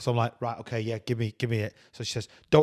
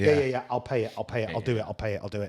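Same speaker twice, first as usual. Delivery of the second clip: ordinary delivery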